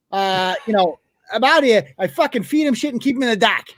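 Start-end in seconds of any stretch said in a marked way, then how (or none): 1.3-3.6 put-on ranting in Boston accent. Acting out someone talking about the dock, in a put-on boston accent. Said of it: "That's that's, that's Boston".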